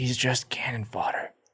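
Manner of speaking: hushed whisper, under the breath. Turning to Lydia about the drunkard, the speaker's character is whispering. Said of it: "I turn to Lydia and whisper to her".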